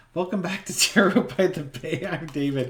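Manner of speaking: talking while still laughing. Host welcoming viewers back to zero by the bay, laughing while talking. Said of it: "I'm still laughing".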